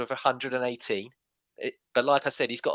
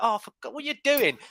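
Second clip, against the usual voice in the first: put-on high, frustrated, exasperated yell; 10 semitones higher than usual. Retelling watching a goal at the weekend: imitating screaming at the tv. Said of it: "I'm screaming at the telly going".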